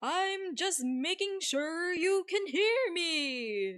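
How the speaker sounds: over-the-top slow yell, me stretched out. Reading a game scene, a character answers a little frog, yelling. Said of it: "You don't have to yell".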